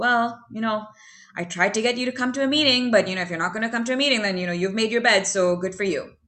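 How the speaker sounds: mock self-righteous preachy voice. Retelling how the speaker used to talk to her, in a mock self-righteous judgmental voice. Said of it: "that self righteous judgmental".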